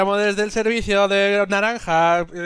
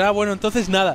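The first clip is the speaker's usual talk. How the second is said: plain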